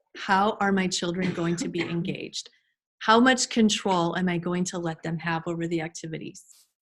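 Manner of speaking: plain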